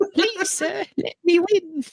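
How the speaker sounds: very high-pitched, pleading cockney urchin voice. Teasing Eddie about how he made someone sound, doing an Artful Dodger voice. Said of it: "you made him sound like the Artful Dodger".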